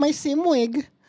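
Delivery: put-on tiny, high-pitched, super cutesy little kid voice. Reading a sim rig's title aloud, in a super cutesy voice. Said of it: "I heard it as a super cutesy voice".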